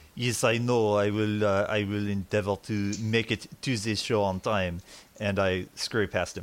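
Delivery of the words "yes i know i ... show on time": put-on ridiculous French-accented voice. Voicing a character hurrying to the show in a ridiculous French accent. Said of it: "that ridiculous accent".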